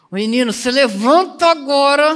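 stern, furious, loud and high angry voice. Acting out how a mother talks to her child, mock-angry scolding mother. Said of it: "Você já viu sua mãe falar assim com você? ... É assim, ó. Você tá com tanta raiva".

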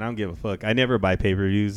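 ordinary talk

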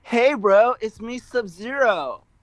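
very slow, high, deliberately obnoxious, drawn-out delivery. Trying out a Sub-Zero voice for the others. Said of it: "I'll just say".

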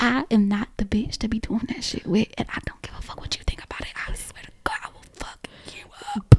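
close, threatening whisper. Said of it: "I'm gonna whisper and talk".

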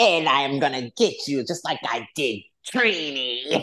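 put-on relishing glee, stretched-out Trinidadian accent. Recalling how she delivered her lines, the speaker imitates her gleeful voice. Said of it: "you could just hear the glee in her voice".

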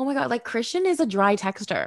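ordinary talk, nothing marked

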